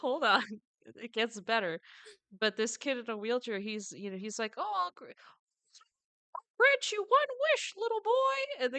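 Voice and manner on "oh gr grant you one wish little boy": very high, squeaky put-on cartoonish voice. Retelling a funny bit where someone grants a kid a wish, doing the wish-granter's voice. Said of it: "he the guy is like doing the voice".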